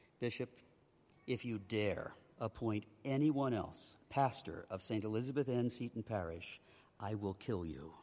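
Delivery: put-on grave, dead-serious delivery, low and hushed. Retelling words to the Bishop in his office, retelling a somber, serious tone. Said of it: "I said with a somber and serious tone".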